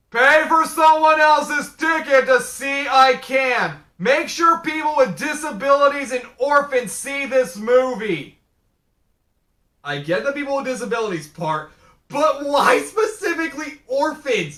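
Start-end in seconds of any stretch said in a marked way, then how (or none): 0.2-8.4 very loud promo-style announcer voice. Quoting what a movie shows at its end, in a very loud voice. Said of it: "in a very loud voice".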